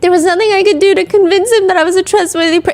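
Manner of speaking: put-on high, weepy, tearful voice like a sobbing child. Showing how an emotional person sounds explaining something, tearful, childlike crying voice. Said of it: "like when you're mm. drunk and you're trying to like explain something yep. as you're crying".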